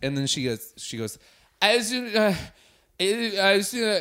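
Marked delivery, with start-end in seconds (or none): 1.6-4.0 put-on very slow, drawn-out, slurred drunk voice. Retelling what a drunk girl in his bed said: imitating a drunk girl. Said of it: "drunk as shit".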